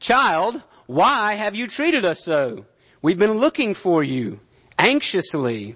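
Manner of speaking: play-acted reproachful, stern, disciplinary scolding tone. Quoting a mother finding her lost child: imitating Mary's disciplinary tone. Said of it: "You can hear that disciplinary tone".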